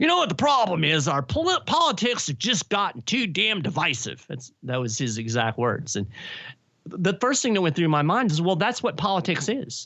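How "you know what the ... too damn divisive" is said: higher, put-on elderly old man voice. Retelling an old man overheard talking politics at the gym, old man voice. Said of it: "So this is my old man voice".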